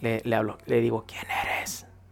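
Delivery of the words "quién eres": mock soft, low voice, quieter. Retelling a question asked to a strange being: retelling a soft low question. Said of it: "Es así bajito".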